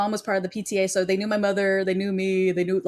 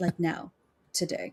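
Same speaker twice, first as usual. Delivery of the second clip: quieter, softer delivery; 2 semitones lower, 8 dB quieter than usual. Retelling confronting classmates who owe money: retelling own past threat. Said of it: "I'm like".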